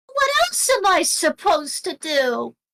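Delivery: put-on small, sing-song little kid voice. Narrating a fight scene, the speaker voices a character, little kid voice. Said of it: "it's the little kid voice again".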